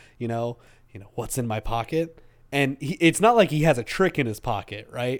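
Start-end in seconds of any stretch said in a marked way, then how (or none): 1.2-2.2 put-on stoic mutter, quieter. Retelling a line from the latest episode, mimicking Goblin Slayer's stoic mutter. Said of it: "he mutters under his breath stoically".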